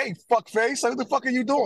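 high-pitched, hollered yell. Retelling confronting a man backing up his car: retelling a yell. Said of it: "yell at this guy".

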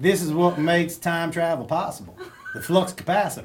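put-on American Southern accent. Saying a Back to the Future quote for others to guess the accent: put-on Southern US accent. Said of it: "I think it's a Southern accent. / Yeah, we got one right!".

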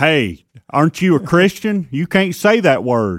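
high, outraged, indignant, reproachful scolding voice. Imitating people who send emails complaining about a bad word: imitating an outraged email complainer. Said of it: "is that the voice?".

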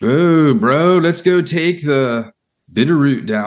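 put-on slow Southern California bro accent. Speaker mocking Californian newcomers to the area, The Californians SNL impression. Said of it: "I'm trying to do the Californians from SNL".

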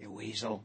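hushed voice. Showing how to say the word: whispering. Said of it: "You gotta kinda say it with a whisper".

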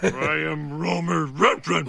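low, rough, growled cartoon dog voice. A man ordered to call himself a lowly dog, in a dog voice. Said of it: "In a dog voice".

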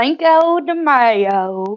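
put-on country drawl, "mayo" stretched out. Repeating a holiday name just said, in a country voice. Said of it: "I gotta say it in my country voice".

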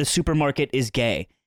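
ordinary delivery

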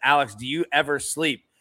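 ordinary talk, nothing marked

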